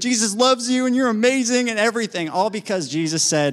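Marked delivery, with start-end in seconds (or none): 0.0-1.7 high-pitched, loud hollered shout. Retelling a man running around a parking lot: imitating someone yelling. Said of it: "he starts yelling and screaming".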